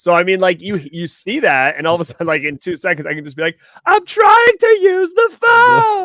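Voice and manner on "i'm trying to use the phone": squeaky, very high, loud, very slow and drawn out. Asked to do an impression of a scene's line, doing it instantly. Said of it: "wants us all to do an impression of".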